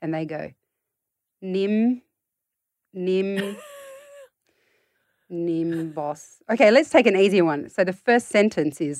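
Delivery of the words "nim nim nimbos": halting, unsure sounding out with sing-song, swooping pitch. Acting out a tired parent's child sounding out a hard word: imitating a child sounding out a word. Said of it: "I'm gonna try and channel your child reading".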